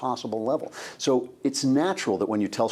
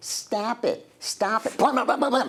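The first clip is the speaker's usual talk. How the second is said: very high, tiny, squirrely, squeaky little bleat; 12 semitones higher than usual. Imitating the voiceover line Mega Man says: squirrely little bleat Mega Man voice. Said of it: "in this kind of really squirrely little bleat would go".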